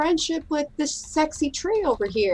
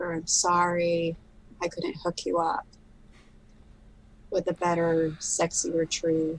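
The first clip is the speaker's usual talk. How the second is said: quiet, soft, hushed half-whisper; 7 semitones lower, 5 dB quieter than usual. Speaking in character to a dead tree: quiet half-whisper. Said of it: "quietly whisper".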